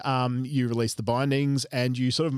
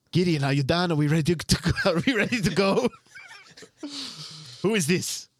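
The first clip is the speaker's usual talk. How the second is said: put-on slight Spanish accent, pitched up; 5 semitones higher than usual. Voicing a character for the group, trying a slight spanish accent. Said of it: "I don't want to go too Spanish".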